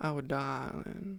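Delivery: put-on American Southern accent. Slipping back into the voice for a character: southern accent. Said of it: "I always bring the southern accent back".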